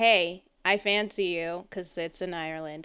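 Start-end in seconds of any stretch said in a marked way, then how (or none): 0.0-1.7 put-on drunken speech. Retelling a movie scene where she tells him: imitating drunken speech. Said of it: "she's drunkenly telling to him".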